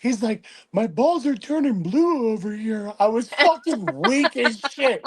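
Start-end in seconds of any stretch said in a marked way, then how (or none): 0.7-2.9 crazily creepy character voice. Retelling a show episode to a friend, quoting a character: imitating a show character's voice. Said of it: "But in that voice".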